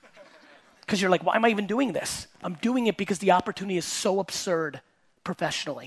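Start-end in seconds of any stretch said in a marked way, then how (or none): none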